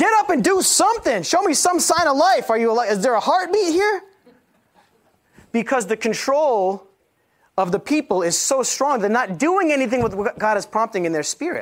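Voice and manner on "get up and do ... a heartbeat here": very high, screaming, rousing shout. Acting out own call to the church: acting out own shouting. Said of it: "screaming, shouting over the church".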